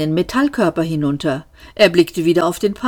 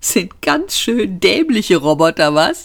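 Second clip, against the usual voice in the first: merry, gleeful inward snicker, chuckling; 3 semitones higher than usual. Seyfort speaks to himself while a robot searches for him, chuckling gleefully. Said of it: "kicherte Seyfort vergnügt in sich hinein".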